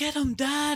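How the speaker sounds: put-on whispered yell. Imitating a line from Attack of the Clones: Boba Fett yell whisper. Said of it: "speaks in, like, yell whisper".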